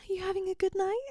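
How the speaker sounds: very high, stiff, uptight voice. Retelling a woman greeting the speaker, imitating her uptight voice. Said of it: "The most absolute like tight ass voice".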